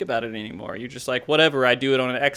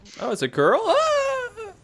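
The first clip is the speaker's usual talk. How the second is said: put-on excited voice, very high, very slow, swooping, drawn out. Doing an impression of Arthas reacting to a question: imitating Arthas. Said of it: "That's my impression".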